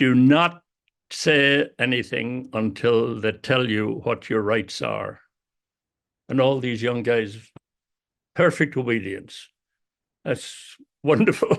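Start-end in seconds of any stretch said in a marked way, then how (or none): 0.0-5.2 large, full voice. Retelling addressing a line of young guys held by police, in a big voice. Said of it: "I said in a big voice".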